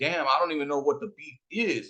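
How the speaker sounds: ordinary delivery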